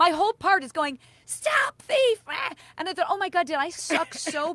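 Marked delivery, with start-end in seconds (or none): 1.3-2.2 very high, shrill, alarmed shriek. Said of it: "Did I just scream like so?".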